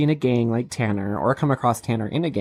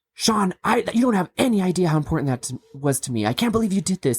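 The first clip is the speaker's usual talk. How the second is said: mock-furious, angry outburst; 7 semitones higher than usual. Recapping an episode's ending, voicing Jason confronting another man, imitating furious Jason. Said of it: "Jason's furious and he's like".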